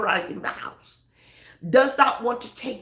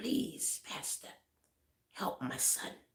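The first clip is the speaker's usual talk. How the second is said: hushed whisper, voice crackling and cracking with tears; 14 dB quieter than usual. Pastor retelling a crying father's phone call, imitating a crying, cracking voice. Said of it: "you could hear the crackling in his voice".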